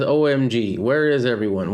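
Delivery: ordinary talk, nothing marked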